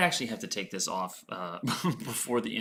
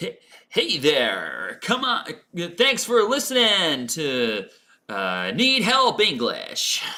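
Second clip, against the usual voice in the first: loud, swooping eighties radio disc jockey voice; 7 semitones higher, 5 dB louder than usual. Trying out how eighties radio DJs talk on a Halloween livestream; eighties radio DJ voice. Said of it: "Is that radio voice?".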